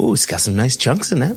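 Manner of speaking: play-acted borrowed tone with an opening ooh. Repeating another speaker's words about a sample in that tone. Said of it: "in that tone".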